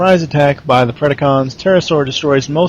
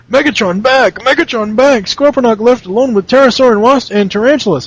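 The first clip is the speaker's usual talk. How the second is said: put-on dim-witted, childish teenage cartoon voice, pitched higher; 9 semitones higher, 4 dB louder than usual. Quoting a robot character's lines from the episode: Scorponok voice. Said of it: "he sounds like a very low-functioning adolescent".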